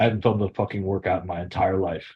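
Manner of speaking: low, rushed, grumbling mutter under the breath. Retelling what a buddy said walking past with AirPods in, retelling Gary's mutter under breath. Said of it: "He just mutters that under his breath".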